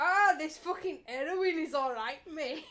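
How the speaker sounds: bad Scottish accent that comes out Welsh. Admitting they can't do scottish, the speaker tries a bad scottish accent. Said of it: "But it ends up sounding Welsh".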